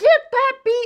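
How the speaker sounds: very high, shrill, top-of-the-lungs shriek. Retelling a phone call overheard through gossip: imitating someone screaming at the top of her lungs. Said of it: "Linda is screaming to the top of her lungs".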